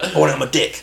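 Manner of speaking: mock tough English geezer voice. Retelling what a customer said on walking in: imitating a tough English geezer. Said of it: "bulldog chewing a wasp type English geezer".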